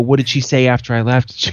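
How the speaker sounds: normal talking voice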